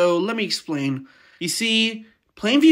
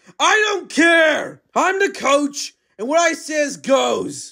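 bossy, high, barking drill-sergeant shout; 6 semitones higher than usual. Narrator voices the coach cutting off a player after a break, drill-sergeant coach shouting. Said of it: "He's a type of drill sergeant, / He's a type of drill sergeant, / he's my coach again, / he's my coach again".

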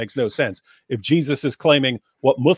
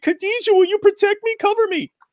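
mocking little kid voice, higher. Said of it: "that sounds like a little kid".

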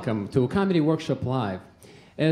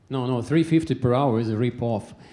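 usual speaking voice

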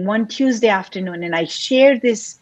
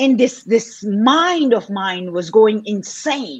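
normal talking voice

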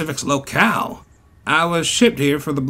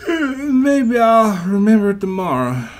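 sleepy, pitched-up speech through a yawn; 6 semitones higher, 4 dB louder than usual. Narrator reads a tired character's line after a long journey: yawning. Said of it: "he yawned".

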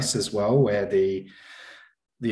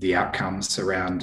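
usual speaking voice

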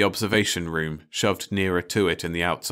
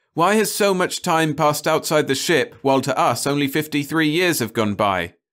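loud, high crying out; 8 semitones higher, 5 dB louder than usual. Narrator reads a man answering listeners who don't believe him, crying out. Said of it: "he cried".

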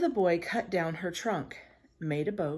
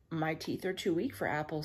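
usual speaking voice

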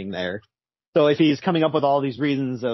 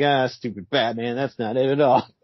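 put-on mocking taunt. Retelling the Riddler mocking Batman in his head, as a mock Riddler gloating taunt. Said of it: "the Riddler's just laughing at him".

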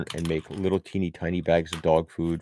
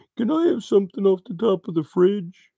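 very high, human-sounding pretend pet dog voice; 5 dB louder than usual. Telling a story about her dog, pretending the dog is talking. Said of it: "me pretending it's her talking".

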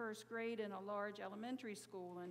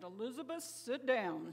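mock sternest, no-nonsense teacher voice, raised; 5 dB louder than usual. Retelling a woman on the intercom calling over noisy children: retelling a stern command. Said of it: "in her sternest voice said".

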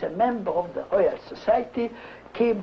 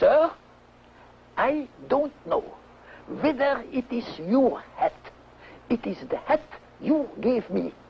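put-on sharp reply tone; 3 semitones higher than usual. Retelling how the janitor answered Sir John, imitating a sharp reply. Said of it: "he answered very sharply".

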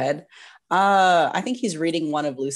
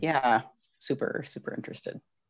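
dry, soft, breathy sarcastic reply; 4 semitones lower, 7 dB quieter than usual. Replying after someone says they're excited about your interest: sarcastic. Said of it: "Was that sarcasm?".

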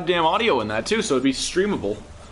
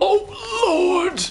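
put-on very high-pitched, scandalised old priest voice; 12 semitones higher than usual. Speaker joking they sound like an old priest witnessing an abomination, shocked old priest voice. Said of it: "I sound like some old priest that's like witnessing some abomination".

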